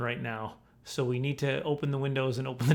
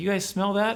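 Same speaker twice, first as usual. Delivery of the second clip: high-pitched, alarmed, panicking, acted-out manner; 7 semitones higher, 4 dB louder than usual. Retelling coming home to a gas smell: retelling own panicked question. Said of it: "So I'm panicking".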